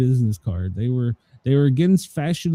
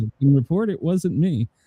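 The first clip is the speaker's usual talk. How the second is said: ordinary talk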